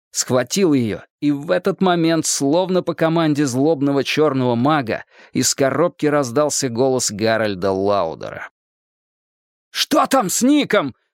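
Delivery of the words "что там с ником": very high-pitched, shrill yell. A man grabs a woman by the shoulders and cries out; shouting. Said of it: "— прокричал Стью".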